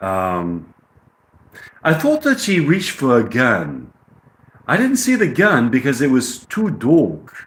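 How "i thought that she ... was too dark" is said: attempted British accent. Reading a passage aloud while learning the accent, in an attempted british accent. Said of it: "trying to learn a British accent".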